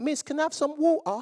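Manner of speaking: dainty, proper voice. Recalling schoolmates who all spoke so delicately, mock-delicate voice. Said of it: "everyone spoke so delicately".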